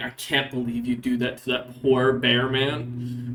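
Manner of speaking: low, muttered half-whisper under the breath. Voicing a soldier muttering about the party at bedtime: half-whispering under his breath. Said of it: "as he kinda whispers under his breath".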